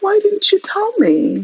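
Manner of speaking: sugary, very high, little sweet voice. Retelling what she said to a man she had feelings for, in a put-on little sweet voice. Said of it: "I'm putting on my little sweet voice".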